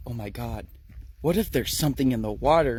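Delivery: panicked, panicking. Acting out a story character who just drank from a stream: panicked. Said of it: "she kinda panicked".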